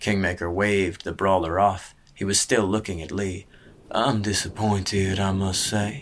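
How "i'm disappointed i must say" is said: soft, quiet murmur, relishing every word. Kingmaker, still looking at Lee, speaks after waving the brawler off, murmured, savoring each word. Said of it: "he murmured, savoring each word".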